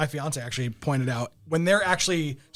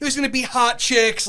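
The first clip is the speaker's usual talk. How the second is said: put-on awkward news reporter voice, higher and louder; 8 semitones higher, 5 dB louder than usual. Imitating a news reporter's opening in a movie: imitating Vinny's awkward reporter delivery. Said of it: "it's so uncomfortably bad".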